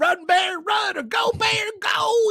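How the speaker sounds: put-on southern accent, very high, very slow drawl. Retelling funny footage of a man chasing off a bear, in a southern accent. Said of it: "like this southern accent".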